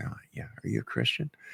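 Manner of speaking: quick, fast, hushed whisper. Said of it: "people kind of whisper".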